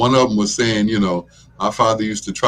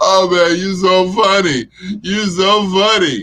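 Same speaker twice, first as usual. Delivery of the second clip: mock drunken laughter, higher; 9 semitones higher, 4 dB louder than usual. Retelling drunk types, imitating a laughing drunk. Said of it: "laughing drunks that can't stop laughing".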